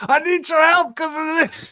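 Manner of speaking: put-on explosive old man bellow, very loud and very high. Describing a story where an old man wakes you, imitating a booming old man. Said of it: "a booming, big, explosive old man".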